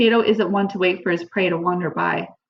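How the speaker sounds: plain reading voice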